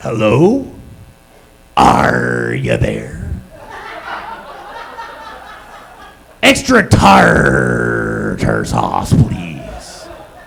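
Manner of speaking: very low pirate voice, leaning hard on r's. Retelling placing a food order, the speaker does a pirate voice with heavy r's. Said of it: "berating them with R's and R's".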